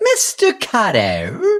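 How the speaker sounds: high, swooping character voice. Recalling playing a sketch role: Horshack voice. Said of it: "I got to be Horseshack".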